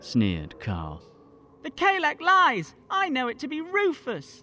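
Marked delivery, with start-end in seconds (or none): 1.6-4.4 very high, drawn-out crying out. Narrator reading an unnamed voice calling from the throng, crying out. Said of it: "cried a voice from the throng".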